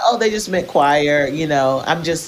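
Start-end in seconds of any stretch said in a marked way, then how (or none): none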